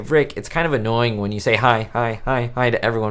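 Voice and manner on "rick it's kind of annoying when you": ordinary delivery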